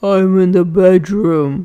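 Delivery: odd, quavering, wobbly disguised voice. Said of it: "replied the wolf in a strange wobbly voice".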